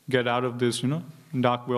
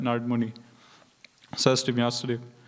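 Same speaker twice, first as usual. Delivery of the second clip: ordinary talk, nothing marked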